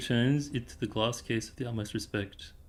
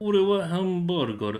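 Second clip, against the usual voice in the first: Russian with fake Japanese accent, higher pitch; 8 semitones higher, 8 dB louder than usual. Trying to do Russian, but in a Japanese accent. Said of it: "Russian, but in Japanese accent".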